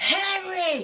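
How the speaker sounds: acted-out, very high, shrill, stretched-out scream. Retelling how she stopped the dog attacking her border collie: retelling her own scream at a dog. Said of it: "And I scream".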